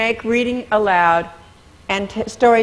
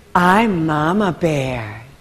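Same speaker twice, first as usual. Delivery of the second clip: softened voice, dropped low in pitch; 5 semitones lower than usual. Voice lesson on making a character's voice different: soft Mama Bear voice. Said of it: "to make her voice different, I make her voice softer".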